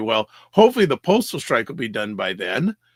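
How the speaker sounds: openly sarcastic, loud and sing-song. Recounting what they told a lady at last night's event, retelling a sarcastic remark. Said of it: "I said sar- sarcastically".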